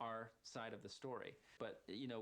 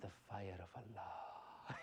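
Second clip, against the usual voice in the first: play-acted, very slow, dead-serious villain delivery; 3 semitones lower than usual. Recalling an audition, the speaker acts out a serious villain line. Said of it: "you got to be serious about it".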